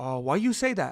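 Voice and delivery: put-on slight foreign accent, broken English, dropped low. Retelling what a man said as he walked away, imitating his slight accent. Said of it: "And the accent".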